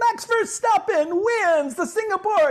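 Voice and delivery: put-on thrilled announcer, mixed voice, very high, loud. Imitating a Formula One announcer calling a win: imitating an excited race announcer. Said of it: "they're up in their mixed voice as part of what is exciting".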